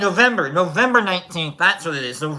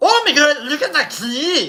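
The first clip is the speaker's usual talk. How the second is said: shoddy, bad Swiss accent, pitched very high; 9 semitones higher, 3 dB louder than usual. Trying a Swiss accent after an Italian one, bad Swiss accent. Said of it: "if I do like a really shitty Italian accent, then I can probably do like a Swiss accent".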